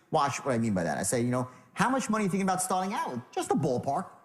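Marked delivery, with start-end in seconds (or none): 1.7-4.0 easygoing, disarming, non-threatening tone. Coaching how to ask about a starting budget, in a disarming tone. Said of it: "go into your disarming tone".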